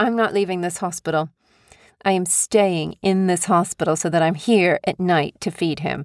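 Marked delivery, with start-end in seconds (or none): none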